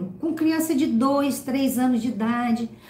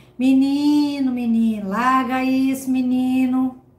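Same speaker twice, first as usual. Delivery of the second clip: slow, dragging drawl with drawn-out, stretched words; 4 dB louder than usual. Telling a boy to drop something, in a slow, dragging voice. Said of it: "aí você fala aquela voz arrastada".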